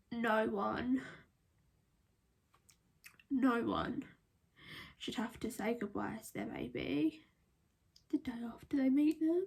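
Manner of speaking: voice holding back tears. Telling about saying goodbye to the baby: holding back tears. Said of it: "I'm really trying so hard to hold these tears back".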